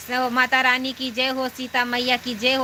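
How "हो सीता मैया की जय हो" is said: ordinary talk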